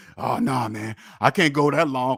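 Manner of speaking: imitated urgent tone. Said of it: "saying it with such urgency".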